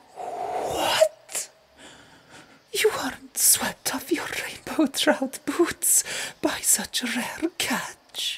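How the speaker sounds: spoken through a laugh. Narrator reads Astrid's line to Harald, laughing. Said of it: "she laughed".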